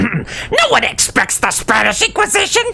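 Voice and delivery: high, cracking, rough, slow, drawn-out voice. Redoing a quote in a better voice, voice cracking on Monty Python line. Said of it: "I cracked my voice".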